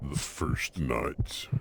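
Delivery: deep, low, hushed dramatic voice, near a whisper. Speaker adds a sound for the moment while playing, using the deep voice. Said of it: "the deep voice".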